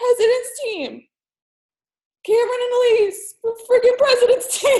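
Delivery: talking while weeping, tearful, crying through the words. Announcing team members to people watching online, crying while talking. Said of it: "Now I'm crying again".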